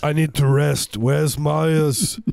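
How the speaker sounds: very loud put-on German accent. Joking about a friend Marius, voicing Arnold Schwarzenegger in a German accent. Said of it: "my German accent, I'm sorry".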